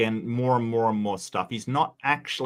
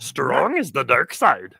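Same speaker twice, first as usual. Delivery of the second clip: put-on wise old alien voice, higher and louder; 3 semitones higher, 5 dB louder than usual. Joining in after another speaker mentions channeling Yoda: Yoda voice. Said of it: "I just channeled my inner Yoda".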